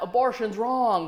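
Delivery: put-on curt, blunt, blurted heckling. Retelling a heckler in the audience: imitating a man yelling. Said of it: "yelled out".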